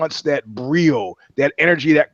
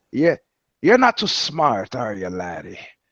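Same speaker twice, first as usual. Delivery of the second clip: low, deep, swooping Irish brogue; 4 semitones lower than usual. Retelling McCourt's retort to someone making fart noises: McCourt's Irish brogue. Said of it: "he says in his you know Irish brogue".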